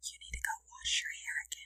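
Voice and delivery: very soft, hushed whisper under the breath. Retelling whispering at a daughter after her shower: imitating a whisper. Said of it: "I was just whispering at her".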